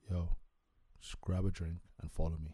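very low, hushed, secretive whisper. Acting out one of your boys coming up to you; very low-toned voice. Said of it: "in a very low tone voice".

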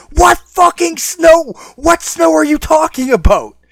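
shrill, very high, all-out top-of-the-lungs scream. Recalling being dragged away by Dad, retelling a scream. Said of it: "I'm screaming at the top of my line".

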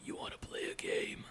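quiet horror villain voice. Asked by the other speaker to say a line in a Jigsaw voice: Jigsaw voice. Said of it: "but in a Jigsaw voice".

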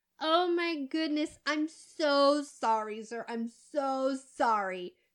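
fake, overdone apologetic tone. Retelling a waitress apologizing after spilling water: mock fake apology. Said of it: "She goes into a fake bout of apologetics".

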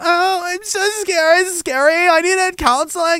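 affected put-on effeminate voice, very high, drawn out. Imitating coworkers who felt scared, mocking: mocking put-on effeminate voice.

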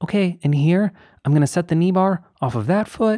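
squeaky, very high voice. Retelling what a climber said while filming her beta, Sarah Brangos voice. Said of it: "Is that your Sarah Brangos voice?".

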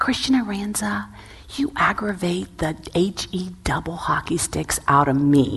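slow, deliberate, each word placed on purpose. Retelling leaning in at the table toward a child: imitating a deliberate delivery. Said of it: "like, deliberately, and I go".

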